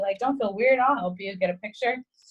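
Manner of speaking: ordinary talk, nothing marked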